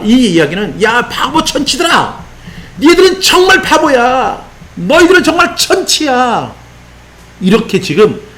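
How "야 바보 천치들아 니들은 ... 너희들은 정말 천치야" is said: high, slow, excited scolding tone. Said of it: "흥분해서 설명하고 있는 거예요".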